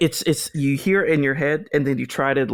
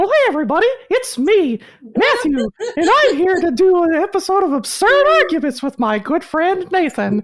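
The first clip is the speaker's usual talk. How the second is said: high, loud, swooping, sing-song cartoon voice; 6 dB louder than usual. Opening an episode with a good friend, in a Mickey Mouse voice. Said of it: "a little easier for me to do Mickey Mouse".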